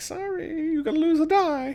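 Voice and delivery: very high, silly, goofy put-on voice. Explaining a game move, showing what a player might say: silly put-on voice. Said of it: "you don't have to say it in that voice".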